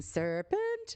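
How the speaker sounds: very high-pitched, screeching scream. Recalling the Alice in Wonderland bird: imitating the Alice in Wonderland bird screaming. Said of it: "She starts screaming".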